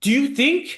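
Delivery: mad, very high-pitched angry tone. Retelling a scene where a character gets mad: imitating a mad character. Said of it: "He's all, like, mad".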